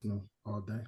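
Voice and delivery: very soft half-whisper, barely there. Answering which team should win the league, half-whispering. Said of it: "Why are you whispering?".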